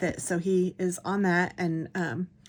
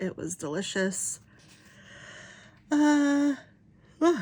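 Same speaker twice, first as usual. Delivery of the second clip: words stretched out of shape mid-yawn, pitched up; 8 semitones higher than usual. Telling about a trip with the kids, yawning while talking. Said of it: "sorry, I'm yawning".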